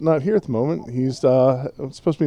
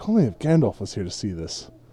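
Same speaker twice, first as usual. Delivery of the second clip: very low, under-the-breath mutter; 7 semitones lower, 5 dB quieter than usual. Retelling a character's aside before he turns to the elves: muttering under his breath. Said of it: "you hear him say under his breath".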